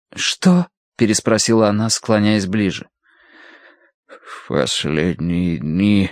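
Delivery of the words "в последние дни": mumbled, indistinct, unclear. A man speaks to a woman leaning close over him: indistinct mutter. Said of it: "пробормотал неразборчиво".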